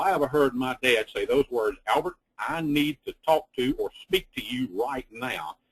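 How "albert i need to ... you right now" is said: ominous, stern, fatherly tone. Recalling his late father calling him in to talk: imitating dad's hollering tone. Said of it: "in that tone of voice and with that voice inflection".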